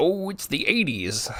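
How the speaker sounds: put-on dismissive old man voice. A speaker mimicking how his past self dismissed problems in a film, old man set in his ways. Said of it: "sounding like an old man set in his ways".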